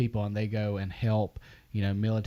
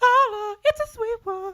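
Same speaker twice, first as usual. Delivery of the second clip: shrill, very high-pitched, loud hollering; 9 dB louder than usual. Thanking a Patreon producer who made Robbie, the host does Robbie's high-pitched hollering. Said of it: "my high pitch hollering voice".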